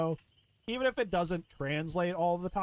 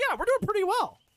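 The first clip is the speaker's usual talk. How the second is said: high, very eager, all-in enthusiastic tone; 6 dB louder than usual. Showing how they would answer a development question: said very enthusiastically. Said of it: "I would just say it very enthusiastically".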